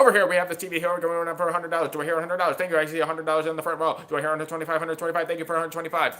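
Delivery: rapid, rattled-off auctioneer patter. Showing how fast the family talks at home, auctioneer patter. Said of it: "We kind of like an auctioneer".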